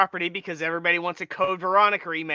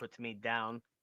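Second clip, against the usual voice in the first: very soft, quiet, muttered cat voice; 8 semitones lower, 16 dB quieter than usual. Joking about a cat being picked up, speaking as the cat. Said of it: "Cat's like".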